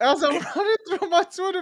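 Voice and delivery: high, laughing through the words. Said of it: "I was dying laughing".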